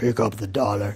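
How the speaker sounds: put-on low, demonic devil voice. Imagining a devil on the shoulder, voicing what it says in a demonic voice. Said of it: "demonic voice".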